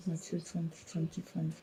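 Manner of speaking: hushed whisper.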